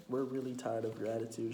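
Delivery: ordinary talk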